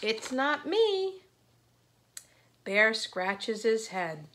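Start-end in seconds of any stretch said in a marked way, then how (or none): 0.0-1.2 small, high little squeak. Reading a story aloud, voicing Mouse's reply to Bear: squeaky Mouse voice. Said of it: "Mouse scurries up and squeaks".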